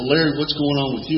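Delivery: ordinary delivery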